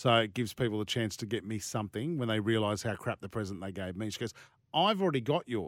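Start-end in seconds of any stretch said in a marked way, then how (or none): 4.7-5.7 put-on New Zealand accent on every word. Retelling what a woman said back to her, in a new zealand accent impersonation. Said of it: "That's my New Zealand accent impersonation".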